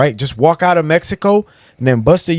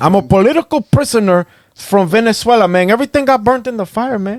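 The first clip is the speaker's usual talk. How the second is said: put-on Cuban accent, higher; 7 semitones higher than usual. Acting out crossing the border as a Venezuelan refugee: Cuban accent. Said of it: "you're talking in the Cuban accent".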